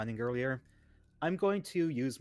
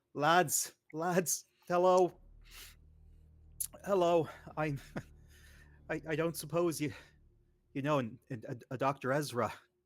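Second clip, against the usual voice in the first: mock drunken slurring, higher; 3 semitones higher than usual. Approaching a table of miners in character: acting drunk. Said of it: "Pretend to be drunk".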